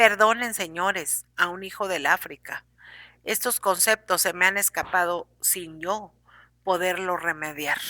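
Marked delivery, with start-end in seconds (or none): none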